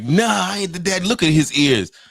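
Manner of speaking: daytime talk-show guest voice, very high pitch. Retelling a talk show guest denying he is the father: imitating a talk show guest. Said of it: "the guy sound like".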